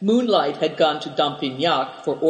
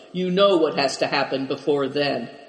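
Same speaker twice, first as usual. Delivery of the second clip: ordinary delivery, nothing marked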